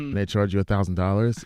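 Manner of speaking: ordinary talk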